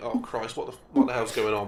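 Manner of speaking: ordinary talk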